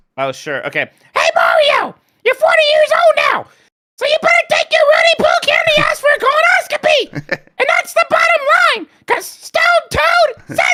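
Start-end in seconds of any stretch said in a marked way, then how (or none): 1.1-10.6 very high, loud character voice, going way up. Reading a message aloud on request, in Toad voice. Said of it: "read this one in your Toad voice".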